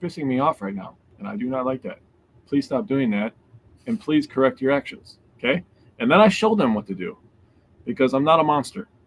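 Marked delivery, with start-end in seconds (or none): 0.0-5.6 very calm, steady, even voice. A parent acts out what they tell their kids when mad, retelling a very calm voice. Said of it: "I tell them in a very calm voice".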